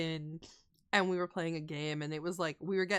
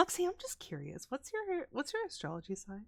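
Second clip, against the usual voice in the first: cute little put-on voice, pitched higher; 9 semitones higher than usual. Retelling how a friend asked about astrology signs: cute little Esper voice. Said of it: "in her, like, cute little Esper voice".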